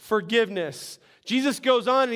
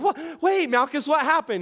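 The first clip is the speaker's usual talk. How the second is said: put-on woman's character voice; 4 semitones higher than usual. Acting out the wife noticing blood on the shirt: voicing Malchus's wife. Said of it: "She's like".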